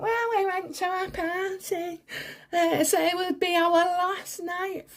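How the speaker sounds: derisive, high and slow. Mocking a quoted excuse before cursing at Meghan: imitating Meghan. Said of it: "Fuck off, Meghan".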